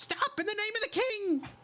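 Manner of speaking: very high, squeaky tiny-creature yell. Narrating a scene, voicing a small creature yelling out in a high-pitched small creature voice. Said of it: "like a higher pitched kind of uh, a voice from a smaller creature".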